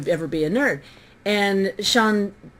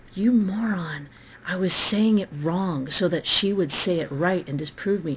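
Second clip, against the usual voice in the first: whisper, pitched lower; 2 semitones lower than usual. Recounting a man leaning in during an argument: retelling a whisper. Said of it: "he leans in and he whispers".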